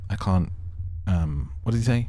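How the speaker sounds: ordinary talk, nothing marked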